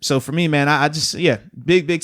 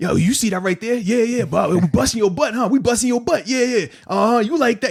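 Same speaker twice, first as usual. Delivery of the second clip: corny, pitched-up, squeaky-clean, family-friendly mocking tone; 8 semitones higher than usual. Showing how an opponent's touchdown smack talk sounded: Philip Rivers smack talk. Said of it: "seriously, that's what it sounds like".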